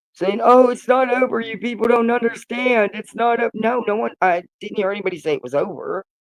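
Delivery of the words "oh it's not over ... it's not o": put-on weepy, sobbing voice, high. Retelling how Brittany reacted to the rejected filing: imitating Brittany crying. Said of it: "But Brittany was crying".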